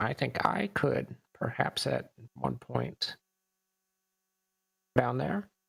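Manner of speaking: soft, hushed whispered aside. Player voicing Sibo as the group walks away, Sibo whispering.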